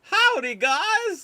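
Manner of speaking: silly, shrill, very high, loud, stretched-out goofy voice. Retelling Arnold's line from a deleted Terminator scene: goofy Arnold Schwarzenegger voice. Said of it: "this goofy voice".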